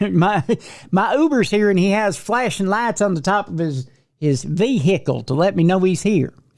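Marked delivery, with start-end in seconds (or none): 0.0-1.7 imitated Southern accent. Imitating an arrested man asking for a ride home: imitating a Southern accent. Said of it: "doing a Southern accent on the show".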